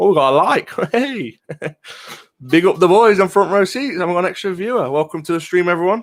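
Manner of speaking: high, loud voice full of thrilled, excited delight.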